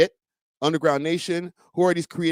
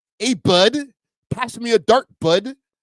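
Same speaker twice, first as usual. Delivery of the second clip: loud, high, exaggerated put-on Canadian accent; 5 semitones higher, 5 dB louder than usual. Showing the kind of canadian accent people talk about: put-on canadian accent. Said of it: "that kind of Canadian accent".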